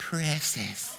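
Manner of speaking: hissing put-on creature voice. Comparing how a word sounds, like Gollum in Lord of the Rings: Gollum voice. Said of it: "Like Gollum in Lord of the Rings".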